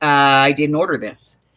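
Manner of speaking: ordinary talk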